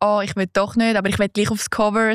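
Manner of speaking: plain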